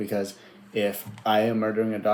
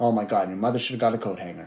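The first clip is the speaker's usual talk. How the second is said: imitated angry cussing rant. Imitating how the player would cuss someone out: imitating someone cussing you out. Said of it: "he would cuss you out".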